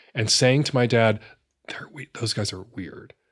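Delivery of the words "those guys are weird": muttered under breath, much quieter, lower. Speaker quotes their mother remarking to their dad, muttered under her breath. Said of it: "under her breath".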